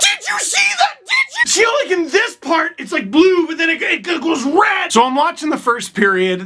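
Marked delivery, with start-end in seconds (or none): 0.0-5.0 excited, very high-pitched, swooping, acted-out screaming. Imitating someone reacting to a heat map: mock screaming.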